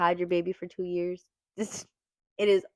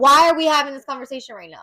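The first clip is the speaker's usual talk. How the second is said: put-on screaming, higher and louder; 7 semitones higher, 10 dB louder than usual. Retelling being in labor and told to talk: retelling own screaming. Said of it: "I am literally sitting there screaming".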